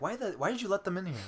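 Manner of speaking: high, fast, mock yelling.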